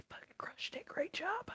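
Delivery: very soft whisper under the breath. Putting him on the speaker's shoulder, retelling a whisper. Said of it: "I whisper like".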